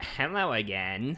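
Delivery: put-on nasal valley girl speech. Recalling the funny accent they did for the Ga-Matoran, nasal Ga-Matoran Valley Girl voice. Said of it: "That was very nasally".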